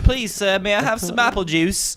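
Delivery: put-on British accent. Imagining walking into Food Lion with a cup, in a bad British Oliver voice. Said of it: "What kind of accent was that?".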